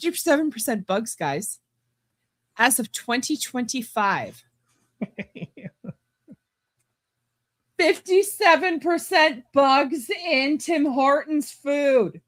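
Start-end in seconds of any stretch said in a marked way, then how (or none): 7.8-12.1 high, loud yelling. Reading out a viewer's claim, yelling at the person over here, yelling. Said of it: "why are you yelling?".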